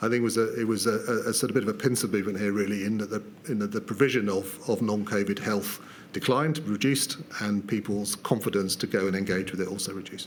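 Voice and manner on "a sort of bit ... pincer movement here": rushed, very fast, rattled-off delivery. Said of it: "Could you slow down a little?".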